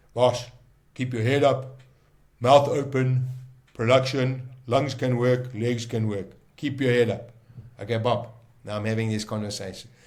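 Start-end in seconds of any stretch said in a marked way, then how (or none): 0.1-7.3 big, gruff, raised man's voice. Retelling a conversation, the speaker answers as Bob: Bob's big gruff voice. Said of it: "Bob was a big gruff voice".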